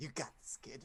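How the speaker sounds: small creature voice. Voicing a small masked creature encouraging a wounded character: voice of a small wasp-masked creature. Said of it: "Is it Danny DeVito?".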